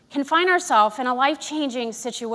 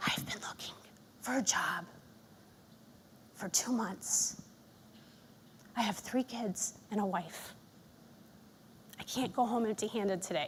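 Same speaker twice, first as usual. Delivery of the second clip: hushed, very quiet, breathy whisper; 4 semitones lower, 15 dB quieter than usual. Retelling what a visitor at the food pantry said: imitating someone whispering. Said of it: "he held his head low and he whispered".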